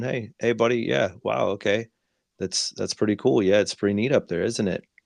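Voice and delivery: acted calm, easygoing, even soothing tone. Parent showing how they spoke to their toddler on the roof, in a calm tone. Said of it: "with a just calm tone".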